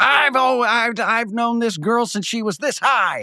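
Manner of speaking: mock brash, crazy loud, very high voice. Retelling a family friend in a Starbucks, imitating him being crazy loud. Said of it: "he was so crazy loud".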